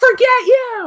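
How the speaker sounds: high, slow, drawn-out scream. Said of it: "Tori screams".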